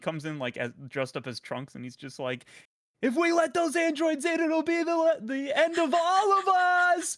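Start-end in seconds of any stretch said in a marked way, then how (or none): 3.0-7.2 put-on scream, higher and louder. Retelling a video where someone dressed up bursts in: imitating a scream. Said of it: "he, like, screams".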